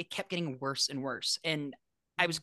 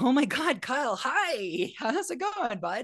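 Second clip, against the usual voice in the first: freaked-out, flustered, high and drawn-out panic; 9 semitones higher, 3 dB louder than usual. Retelling answering a friend's call while freaking out: imitating own past panic. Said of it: "I immediately started freaking out".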